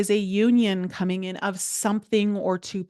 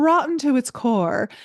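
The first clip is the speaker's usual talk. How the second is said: slightly theatrical flourish with dramatic, heavy emphasis; 5 semitones higher, 4 dB louder than usual. Interpreting the devil card in reverse, the speaker adds dramatic emphasis. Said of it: "I'm going to be a little dramatic here".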